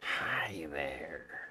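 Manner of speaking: thin, hissing reptile voice, sounding distant. Showing off the different voices they do for fantasy races, Argonian voice. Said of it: "That's my Argonian voice".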